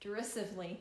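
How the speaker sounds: plain reading voice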